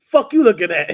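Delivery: put-on New York toughness. Speaker describes strangers reacting to his greeting, imitating a rude New Yorker.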